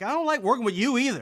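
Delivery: acted, fed-up, exasperated, high-pitched delivery. Retelling replying to the puppet in the act: imitating being exasperated.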